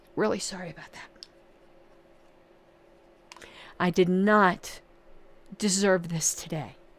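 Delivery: hoarse, strained voice, voice giving out. Apologizing to viewers after needing an inhaler: hoarse, strained voice. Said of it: "I'm losing my voice".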